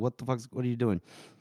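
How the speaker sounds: mock frantic, fast, panicked, freaking-out outburst. Retelling a character's reaction to a dagger: imitating someone freaking out. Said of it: "she's starting to, like, freak out".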